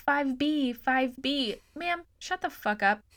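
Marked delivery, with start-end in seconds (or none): 0.0-1.6 mock desperate, frantic calling out. Mocking a bad actress in a stuck-elevator scene, imitating someone yelling for help. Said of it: "She's like yelling for help".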